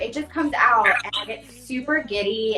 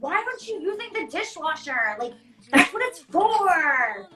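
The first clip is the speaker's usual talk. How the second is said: mock irritated tone, pitched up, drawn out; 7 semitones higher than usual. Retelling a fight with him over hand-washed dishes: retelling an angry complaint. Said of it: "mad at him".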